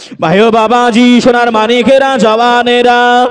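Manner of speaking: high, slow, drawn-out preacher-style call.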